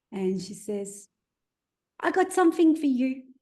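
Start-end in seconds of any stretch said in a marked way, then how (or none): 2.0-3.1 put-on high, loud small child's voice. Retelling what a woman said as she sat down, in a little kid's voice. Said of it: "this little kid's voice comes out of her mouth".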